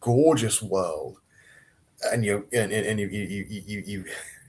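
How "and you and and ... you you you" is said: excited stuttering, stammering and repeating the same word. Speaking to a listener about a story's gorgeous world, excited stuttering. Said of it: "I'm stuttering because I'm really excited about this".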